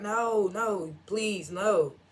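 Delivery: put-on high scream, dragged out very slowly. Retelling a scene where a character is dragged away: imitating someone screaming. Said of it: "So Malcolm screaming".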